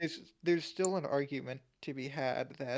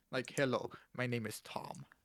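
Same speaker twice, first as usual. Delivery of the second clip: fake Russian accent, lower pitch; 2 semitones lower than usual. Joking about names, saying an American name in a fake Russian accent. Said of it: "say in a Russian accent".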